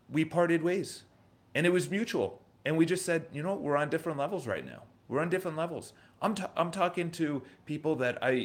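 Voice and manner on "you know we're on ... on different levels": ordinary talk, nothing marked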